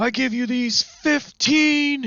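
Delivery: play-acted declaiming shout, pitched way up. Retelling a joke where old man Moses addresses the people, shouting down. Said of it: "And he shouts down".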